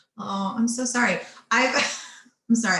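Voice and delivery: laughing through words. Reading out a listener's question, the speaker breaks off apologizing: laughing while talking. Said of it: "I'm laughing because I remember".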